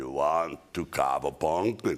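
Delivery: deep, low put-on voice. Retelling how he asked you a question after your little talk, Schwarzenegger impression. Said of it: "[ As Schwarzenegger ]".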